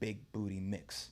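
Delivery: very quiet half-whisper under the breath. Retelling how the trainer half-whispered to the remote: imitating someone half-whispering. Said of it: "whispering to the remote".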